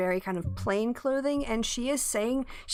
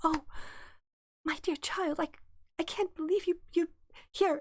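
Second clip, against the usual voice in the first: amazed, gushing priestess voice, pitched up, marvelling; 7 semitones higher than usual. Retelling a game scene, the speaker quotes Bathsheba, imitating her mock amazement. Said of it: "She's like".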